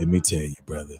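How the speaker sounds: very deep, low, soft man's voice. Quoting a man from the story, imitating how he talked. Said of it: "that's how he talked".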